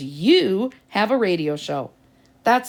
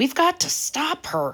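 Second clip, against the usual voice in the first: choked, strangled, high stage whisper; 7 semitones higher than usual. Narrator reads Mark as the teacher heads out the door: strangled whisper. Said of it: "whispered Mark in a strangled voice".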